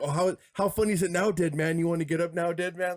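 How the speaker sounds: imitated taunting whisper. Retelling a taunt that someone would always whisper: imitating someone whispering. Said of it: "he would always whisper to him".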